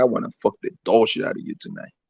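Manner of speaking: low, breathy whisper, very close. Retelling what they say when drunk on Henny: imitating own whisper. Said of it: "I just start whispering on the bitch's ear".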